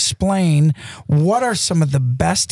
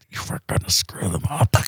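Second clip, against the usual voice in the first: mock gritted-teeth voice, quieter; 8 semitones lower, 6 dB quieter than usual. Retelling what a first-timer said in the turkey blind, through gritted teeth. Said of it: "she's got her teeth grit".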